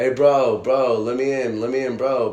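acted-out yell. Retelling banging on a locked house door and calling to be let in, re-enacted shouting. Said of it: "I'm shouting his name".

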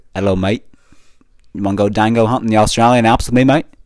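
obviously fake, put-on Australian accent. Asked to say it again, repeating the line in a put-on Australian accent. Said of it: "Say it again".

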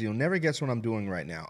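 ordinary talk

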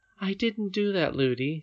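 hushed, very quiet, light and high. Speaking to her nurse, she replies very quietly. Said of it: "said Irene very quietly".

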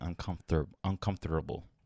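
emphasis on 'uncomfortable'. Correcting the other speaker's word, the speaker repeats it, stressing 'uncomfortable'. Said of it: "I try to emphasize the word".

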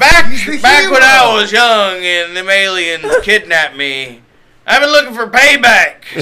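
put-on very loud, high, drunken holler. Playing the drunk guy from Independence Day: Randy Quaid voice. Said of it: "I want the drunk guy from Independence Day".

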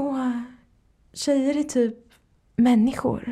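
high, airy, mocking guy voice.

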